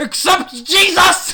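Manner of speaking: very high, slow, loud booming shout.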